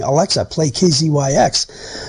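ordinary talk, nothing marked

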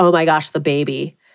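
put-on, completely flat deadpan delivery. Retelling the reply to someone asking where the baby was, completely deadpan. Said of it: "I looked at them completely deadpan and was like".

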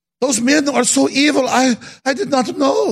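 put-on clumsy, poor German accent. Acting out people at a gathering in Germany: bad German accent. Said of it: "I'm not doing a good German accent".

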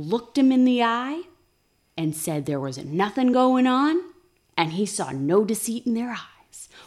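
grand, dramatic, theatrical storyteller's delivery. Retelling what a man reports about two people, dramatic delivery. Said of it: "Why I had to say it dramatically like that".

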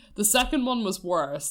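plain

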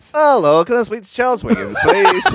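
high, shrill, loud, distracted cold caller voice. Retelling nuisance phone calls, imitating a distracted cold caller. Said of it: "That's how they always sound".

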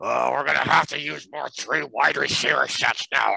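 put-on voice through gritted teeth. Retelling a coach's comment on lost tight ends: Mike Zimmer through gritted teeth. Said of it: "almost through gritted teeth".

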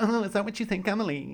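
sassy, high, fake put-on voice. Retelling a reality show chat, imitating a put-on fake voice. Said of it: "putting on the fake voice".

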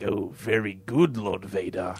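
rasping, very slow delivery. Retelling a Star Wars scene to the other hosts, doing Emperor Palpatine's voice. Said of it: "you're doing the voice".

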